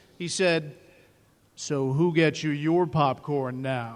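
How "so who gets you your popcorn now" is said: voice dropped low, deep and clear. Retelling what a former boss said at a charity event: imitating Bernard Shaw's deep, clear voice. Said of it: "in his distinctively deep, clear voice".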